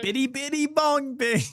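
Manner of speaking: very high Italian-sounding nonsense noises. Doing a comedy bit of nonsense sounds, making Italian noises. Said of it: "a bunch of freaking Italian noises coming out of your mouth".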